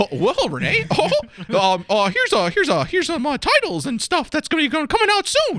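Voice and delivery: high, loud, swooping squeak. Handing Renee titles coming out soon, the speaker talks in a Mickey Mouse voice. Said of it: "I got a good Mickey voice".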